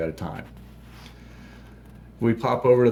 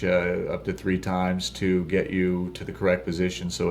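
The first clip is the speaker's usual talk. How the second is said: ordinary talk, nothing marked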